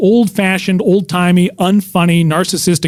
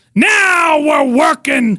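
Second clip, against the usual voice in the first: loud, raised, pitched-up yell; 9 semitones higher than usual. A comic retells what he would shout after every joke: retelling a yell. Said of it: "I would yell".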